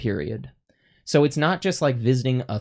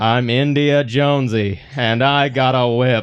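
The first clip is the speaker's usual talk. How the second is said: loud, slow, dragged-out delivery; 6 dB louder than usual. Imitating an actor's caricatured Indiana Jones line: bad Harrison Ford impression as Indiana Jones. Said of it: "it sounds like me doing an impression".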